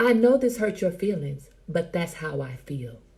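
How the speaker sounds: ordinary delivery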